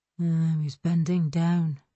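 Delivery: thinking aloud, just to oneself. Scanning the parked cars for a missing driver, muttering to himself. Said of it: "he muttered to himself".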